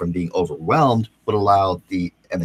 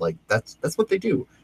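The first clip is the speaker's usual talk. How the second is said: ordinary delivery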